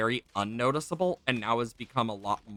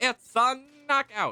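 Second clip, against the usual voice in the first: very high vintage radio announcer voice; 13 semitones higher, 4 dB louder than usual. Showing the phrase that switches into the voice: old radio announcer voice. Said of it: "I have to specifically go".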